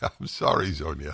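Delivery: laughing while talking. Apologizing to a caller after a phone line mix-up, laughing while talking. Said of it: "I'm laughing because".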